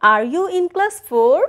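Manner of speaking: rising pitch on the word "four". Intonation drill with a yes-no question in class: rise on four. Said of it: "This is also a rising intonation".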